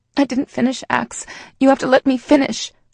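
desperate pleading voice. The narrator speaks to Axe while pacing just out of his reach, desperate. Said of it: "I desperately say".

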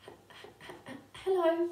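slow, nervous, halting stutter on the h of hello. Showing a class a nervous character's opening line: nervous stutter. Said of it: "You might decide he's gonna say".

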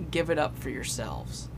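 ordinary talk, nothing marked

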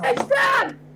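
high, loud shouting.

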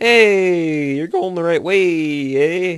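voice cracking mid-line. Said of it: "My voice just cracked".

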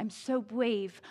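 put-on tiny, little two-year-old's voice. Retelling a two-year-old girl talking herself into the pool, little two-year-old voice. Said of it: "in her little two-year-old voice".

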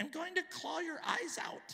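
very high, creepy possessed living doll voice. Retelling a strange voice heard over the television: horror-flick living doll voice. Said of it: "It sounded like one of these dolls that come to life in a horror flick".

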